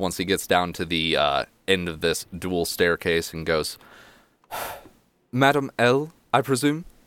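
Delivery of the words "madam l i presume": high, winded, out-of-breath lord voice. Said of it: "huffs and puffs ... and goes".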